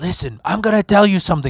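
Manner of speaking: put-on smoker's voice. Retelling what the bartender said to the speaker, imitating her cigarette voice. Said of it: "she's got like this cigarette voice".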